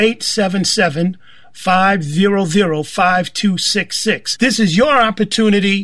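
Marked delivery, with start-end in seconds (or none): 0.0-4.4 very slow, careful, deliberate spelling-out. Radio speaker repeating the station's phone number for listeners, said slowly. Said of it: "Let me say that slowly".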